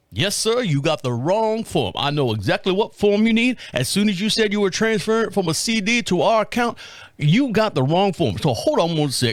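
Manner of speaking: put-on gentlemanly American Southern accent. Caller retells what the man on the line told him, Southern gentleman accent. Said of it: "he sounds like this Southern gentleman now".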